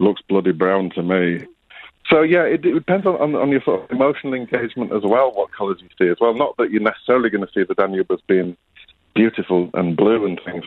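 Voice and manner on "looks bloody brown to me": put-on very flat, level, deadpan Yorkshire accent. Retelling what granddad said in reply at the Danube, flat Yorkshire accent. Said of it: "He said in his very flat Yorkshire accent".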